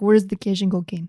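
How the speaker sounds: terrible put-on Russian accent. Speaker quotes an actor's line from her favorite movie moment, terrible fake Russian accent. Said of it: "With a terrible accent".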